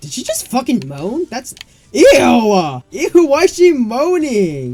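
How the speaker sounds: high, loud, squealing outburst of disgust.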